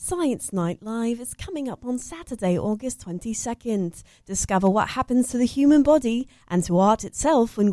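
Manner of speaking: British radio presenter accent. Reading an event announcement when asked, in a BBC radio accent. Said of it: "I would do them with a BBC accent, like a BBC radio voice".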